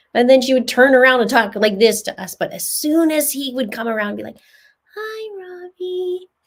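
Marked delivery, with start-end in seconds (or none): 5.0-6.3 put-on soft girly voice jumping up very high. Telling how a girl acted when the boys came by; voice going up like Lori's. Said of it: "her voice would go up like Lori's".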